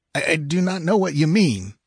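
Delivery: shaken, stumbling, high, faltering stammer. A merchant answers the demand of his uncanny visitors, stammering. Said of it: "stammered the merchant".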